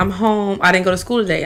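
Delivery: ordinary delivery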